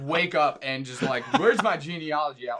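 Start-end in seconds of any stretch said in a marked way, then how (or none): 1.4-2.6 louder, sarcastic, put-on fake enthusiasm. Acting out waking up eager to read a genealogy: mock eagerness, put-on sarcasm. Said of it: "I was definitely being a little sarcastic there".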